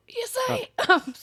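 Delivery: very high voice, giving out. Answering a call to wake up, voice not working. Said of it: "That was my voice not working".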